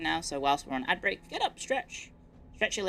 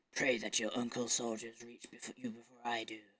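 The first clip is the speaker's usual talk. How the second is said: low, hushed, ominous, menacing villain voice, soft; 6 semitones lower, 9 dB quieter than usual. Trying out lines aloud and asking others to judge, doing a Jensen impression. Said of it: "How's my Jensen impression?".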